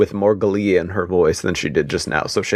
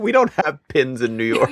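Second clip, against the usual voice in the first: put-on New York accent, pitched higher; 6 semitones higher than usual. Joking about a self-described New Yorker, imitating Demi. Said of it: "Demi's like".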